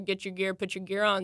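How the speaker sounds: ordinary talk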